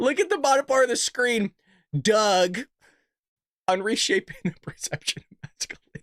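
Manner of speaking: speaking through laughter. Reading a caption at the bottom of the screen, laughing while talking. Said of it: "I can't even get it out".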